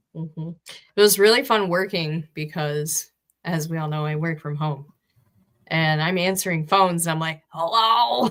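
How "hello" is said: voice almost gone, hardly there. Retelling answering phones while working from home, imitating a barely-there voice. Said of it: "I barely have a voice".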